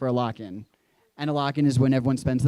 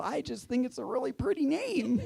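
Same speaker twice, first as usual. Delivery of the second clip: mock, very high, flustered, panicked voice; 12 semitones higher, 6 dB quieter than usual. Retelling own answer to her pointed question: imitating own panicked reply. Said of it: "So I immediately panic".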